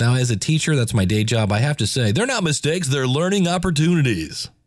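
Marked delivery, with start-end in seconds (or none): 2.1-4.5 annoying put-on radio-announcer delivery. A teacher quoting what teachers have to say, in an annoying radio voice. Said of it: "say it in a annoying radio voice".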